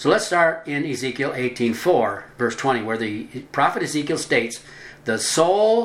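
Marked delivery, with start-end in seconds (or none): 5.0-5.9 soul stressed and pitched high. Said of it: "notice that".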